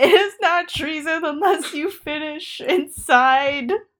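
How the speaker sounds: holding back laughter. Repeating a line the other speaker says can't be said straight: trying not to laugh. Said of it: "I can't say that like with a straight face".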